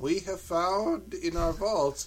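soft put-on Japanese accent slipping in. Quoting the Japanese about a restored Dracula film, in a put-on Japanese accent. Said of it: "I'm trying to not lapse into Japanese accent".

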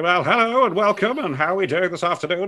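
hammy put-on broadcaster voice, silly, high, loud. Recalling early attempts at broadcasting, in a David Coleman style voice. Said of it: "David Coleman style, you know, that very much silly".

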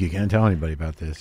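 host-style announcer voice. Retelling what the host said while showing a private room: Robin voice. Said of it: "in his Robin voice".

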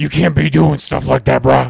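rough, loud, forcefully pushed-out voice. Lecturing Corey about messing with girls: Dog the Bounty Hunter impression. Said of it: "Anybody know Dog the bounty hunter impression?".

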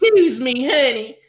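put-on very high, loud, campy Southern belle accent. The speaker imitates a woman who randomly slips into a campy Southern accent. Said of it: "a campy Southern accent".

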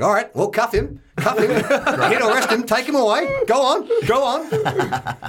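play-acted, very high, indignant, drawn-out outburst. Retelling how dad told police to take the child away: imitating indignant dad. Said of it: "my dad gets all indignant".

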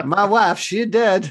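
put-on Eastern European accent. Describing a film scene to others, voicing the character in a Borat-style accent. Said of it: "Is this Borat widow?".

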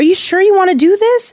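very high, pleading voice.

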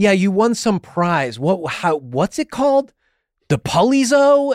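mock aggressive, dismissive delivery.

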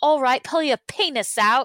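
bad, failed put-on English accent. Imagining what a rich woman would say to men, in a failed english accent. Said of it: "I can't even do an English accent anymore".

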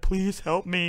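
fake tearful voice. Describing a fighter's meme video, imitating a fake-crying plea. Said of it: "he's got like fake tears on his face".

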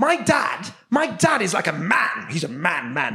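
impression of an English stand-up comedian. Comedy bit about every act seen, english stand-up comedian impression. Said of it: "This is my impression of an English stand-up comedian".

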